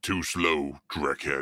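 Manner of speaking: snarled, growling orc voice. Narrating a scene where an orc taunts the man he attacks, growling orc voice. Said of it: "he growls through exposed tusks".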